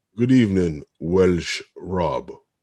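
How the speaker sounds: loud, very slow, drawn-out words. Greeting a newcomer to the chat: sounding like Alfred Hitchcock. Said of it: "you sound like, um, Alfred Hitchcock there".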